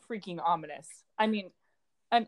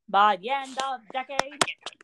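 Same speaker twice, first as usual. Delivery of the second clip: put-on old Boston politician voice, higher; 5 semitones higher, 4 dB louder than usual. Trying out a John Kennedy impersonation for a podcast transition. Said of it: "transition with John Kennedy impersonation".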